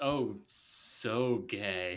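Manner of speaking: mock wooden, unpersuasive, unconvincing delivery. Retelling how an actor answered a challenging question: imitating an unconvincing voice. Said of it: "Unconvincing voice".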